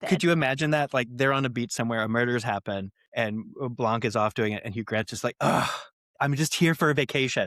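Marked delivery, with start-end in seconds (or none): 5.4-7.5 delightful, complaining voice. Imagining a movie scene, doing Hugh Grant complaining on vacation: delightful complaining Hugh Grant voice. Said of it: "complaining in the most delightful Hugh Grant way possible".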